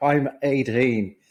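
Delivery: put-on, very proud declaring tone. Retelling answering a caller on the home phone: imitating saying it proudly. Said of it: "I very proudly said".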